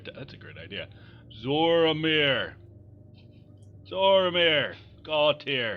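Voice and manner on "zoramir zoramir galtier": booming, much louder and slower voice. In the game, sitting in the town square calling out names: booming call. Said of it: "just like booming my voice".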